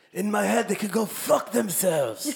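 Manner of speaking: put-on failed British accent, high-pitched and slow. Rereading a quoted remark to friends: bad Kit Harington impression. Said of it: "You don't sound like a Brit at all".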